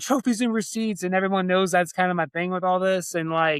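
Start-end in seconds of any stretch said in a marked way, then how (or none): 0.0-1.0 put-on excited, high-pitched cheering call. Retelling a spectator's cheer during the event: imitating someone yelling. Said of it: "Brandy's yelling".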